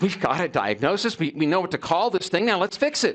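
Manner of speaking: impatient, fed-up, pushing tone in every word. Retelling own past words after a diagnosis, imitating own past impatience. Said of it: "did you hear the impatience in my voice?".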